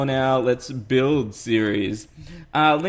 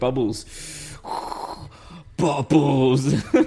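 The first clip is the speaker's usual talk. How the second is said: sinister, evil put-on voice. Fulfilling a viewer's request to say a word: evil voice. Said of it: "say bubbles or marshmallows in an evil voice".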